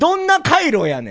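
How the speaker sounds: very slow Kansai dialect. Making a comedic retort in kansai dialect: kansai dialect accent. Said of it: "ちょっと関西弁みたいで言うと".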